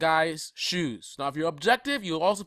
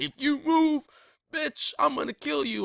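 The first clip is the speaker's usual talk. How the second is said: very high, shrill, thuggish tone; 10 semitones higher than usual. Retelling what a police officer said during an arrest: imitating an officer talking like a thug. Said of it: "One of them is talking like a thug".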